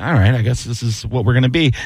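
ordinary delivery

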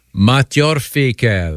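exaggerated put-on French accent. Giving the French pronunciation when asked, sounding like Inspector Clouseau. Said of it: "you sound like Inspector Clouseau".

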